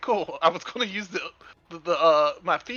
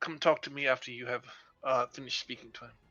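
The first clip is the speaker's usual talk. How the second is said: very quiet, hushed, hurried, quick aside; 5 semitones lower, 9 dB quieter than usual. Voicing a character who answers a companion: speaking very quietly in character. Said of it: "you will hear very quietly".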